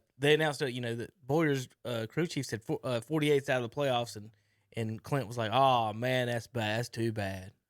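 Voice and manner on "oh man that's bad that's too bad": mock, slow, heavy sarcasm with false sympathy. Retelling Clint's response to the announcement about the crew chief, imitating someone really sarcastic. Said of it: "Really sarcastic".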